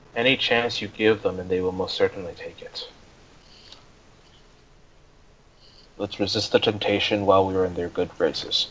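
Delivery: soft, hushed whisper. Speaking in character to Kieran during the scene: whispering. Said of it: "he whispers to Kieran".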